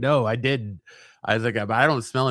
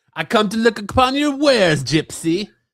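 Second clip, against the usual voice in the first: very high, loud comic voice; 10 semitones higher, 6 dB louder than usual. Joking about a delivery guy rolling up: Borat voice. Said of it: "Brian will roll up like Borat".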